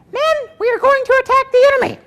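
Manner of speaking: very high-pitched, squeaky general voice. Showing how Patton actually sounded: Patton's high-pitched squeaky voice. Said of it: "Patton actually had a high-pitched squeaky voice".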